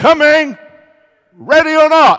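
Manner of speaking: very high-pitched, very loud holler. After counting to ten, turning around and calling out: hollered loudly. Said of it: "I'd holler in a loud voice".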